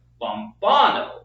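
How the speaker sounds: lombano, stress on second syllable bon. Breaking a word into syllables: stress second syllable of 'lombano'. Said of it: "it's on the second syllable".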